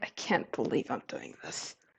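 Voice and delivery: hushed, whispered mutter under the breath. Game master voicing a character's reaction after a perception roll, Mira muttering under breath. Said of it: "he mutters under something under his breath".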